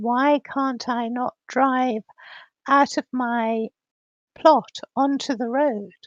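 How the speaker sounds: plain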